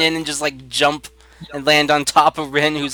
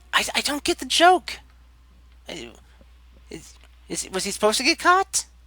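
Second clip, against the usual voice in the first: confused, high, hushed whisper aside; 9 semitones higher, 4 dB quieter than usual. Voicing a confused character whispering to whoever is near: whispering in character. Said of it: "whispering to, like, whoever's near".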